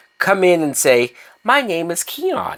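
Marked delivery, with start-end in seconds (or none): 1.4-2.6 slow, higher-pitched serious voice. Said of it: "in a serious voice".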